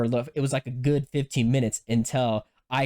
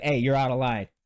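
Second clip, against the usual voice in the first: ordinary talk, nothing marked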